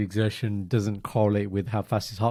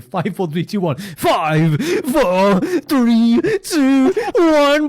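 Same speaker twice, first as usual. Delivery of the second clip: very high, very slow, loud, drawn-out DJ hype voice; 13 semitones higher, 8 dB louder than usual. Suggesting a countdown for the next time the dude starts: best dj voice. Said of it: "you put on your best D J voice".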